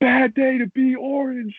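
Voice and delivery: very high-pitched, boozy, drawn-out screaming yell. Retelling walking into a game from the tailgate: imitating own past screaming. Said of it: "I just remember just screaming".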